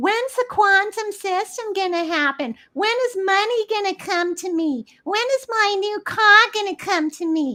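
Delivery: put-on very high-pitched, complaining Brooklyn accent. Acting out people who sit around instead of listing what they're grateful for, brooklyn accent. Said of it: "that's my Brooklyn accent".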